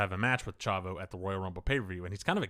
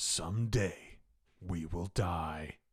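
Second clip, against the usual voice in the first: very drawn-out, slow, dramatic announcer voice-over; 3 semitones lower, 4 dB quieter than usual. Retelling a DVD announcer's line over footage: imitating a dramatic announcer reading. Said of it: "The guy they get to do the dramatic readings".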